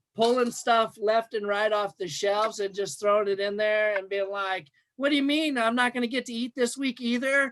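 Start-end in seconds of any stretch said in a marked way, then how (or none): 5.0-7.5 acted high, fast five-year-old child voice. Recounting running through store aisles pulling things off shelves: imitating a five-year-old. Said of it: "I acted like I was five".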